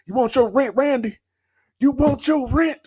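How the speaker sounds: taunting, very high-pitched Southern drawl. Retelling a wrestler's taunt about rent: AJ Styles Southern accent. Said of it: "I love his Southern accent".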